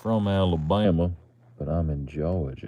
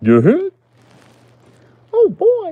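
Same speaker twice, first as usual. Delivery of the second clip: loud, high-pitched cartoonish holler; 12 dB louder than usual. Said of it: "making me think of Goofy".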